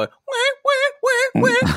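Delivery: whiny wah-wah cry, wailed very high. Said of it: "that's gonna make them go".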